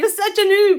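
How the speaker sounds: loud high-pitched yell. A mother retells her daughter yelling at her while teaching her, imitating someone yelling. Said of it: "she's yelling at me".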